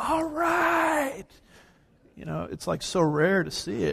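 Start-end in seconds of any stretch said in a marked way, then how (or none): 0.0-1.3 very high approving yell with right drawn out. Retelling how a guy at an amusement park yelled out: imitating a man yelling. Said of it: "this guy just yelled out".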